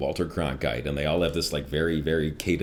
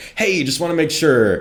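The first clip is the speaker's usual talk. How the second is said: mock very high, very loud, exasperated, agitated tone; 12 semitones higher, 10 dB louder than usual. Telling how a woman kept coming out of the room, imitating an agitated woman. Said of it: "with a little more agitated every time".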